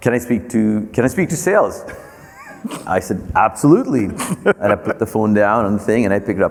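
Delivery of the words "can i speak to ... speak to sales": put-on British-accented voice. Retelling a phone call, quoting the lady customer asking for sales; british accent. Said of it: "it was a British accent".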